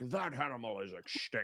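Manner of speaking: put-on stuffy London man voice. Imitating a stuffy man in london declaring an animal extinct: imitating a stuffy london man. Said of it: "some stuffy ass guy in a smoking jacket in London".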